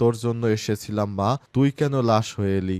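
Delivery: ordinary delivery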